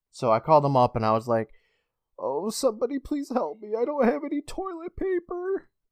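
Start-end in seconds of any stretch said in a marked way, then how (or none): 2.2-5.7 put-on very high, soft little-old-lady voice. Calling up Walmart, pretending to be stuck in a bathroom, in a fake old lady voice. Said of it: "I pretended to be an old lady".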